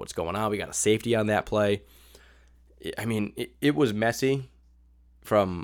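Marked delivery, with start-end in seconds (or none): none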